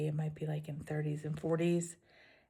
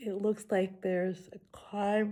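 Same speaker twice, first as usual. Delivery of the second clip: words stretched wide, spoken through a yawn; 4 semitones higher, 3 dB louder than usual. Describing the next hiking stretch to viewers: yawning while speaking. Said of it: "Sorry about the yawning".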